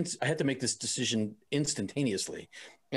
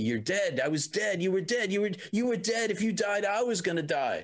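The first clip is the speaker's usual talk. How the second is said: mock screaming and crying, much higher pitch; 6 semitones higher than usual. Recounting the speaker's partner screaming at them, retelling a screaming partner. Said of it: "He's screaming at me".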